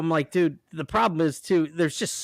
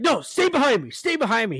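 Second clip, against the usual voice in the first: stern, loud yelling; 7 semitones higher than usual. Retelling a man in a store yelling at his two kids: imitating a man yelling at kids. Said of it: "he's yelling at him".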